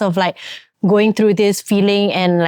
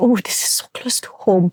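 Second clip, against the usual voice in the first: whispered, private-sounding delivery. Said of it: "because I was like".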